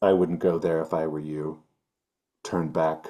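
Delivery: flat, disguised robotic voice. Narrator voices a hidden speaker behind the players, in a disguised robotic voice. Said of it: "like a robotic kind of sounding voice".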